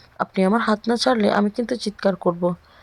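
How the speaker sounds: ordinary delivery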